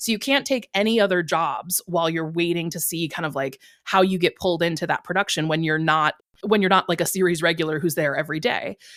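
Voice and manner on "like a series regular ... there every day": normal talking voice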